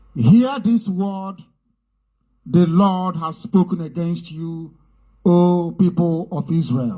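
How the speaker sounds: very slow, deliberate, drawn-out, word-by-word delivery. Paraphrasing scripture so listeners can hear, speaking very, very slowly. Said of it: "I will speak very, very slowly".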